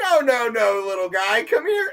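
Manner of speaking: words squeezed through stifled giggles, laughter barely held back. Telling a story about a cop and a raccoon, imitating barely contained laughter. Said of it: "He can barely contain himself".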